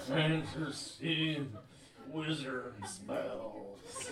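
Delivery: slow, dreamy, drawn-out enticing voice.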